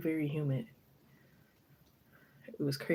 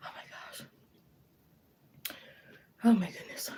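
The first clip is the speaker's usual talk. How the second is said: breathless, whispered gasps. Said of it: "I'm out of breath".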